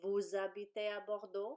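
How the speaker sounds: voice climbs at the end on Bordeaux. French teacher shows how raising the voice makes a question: rising question intonation. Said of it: "You just raise your voice".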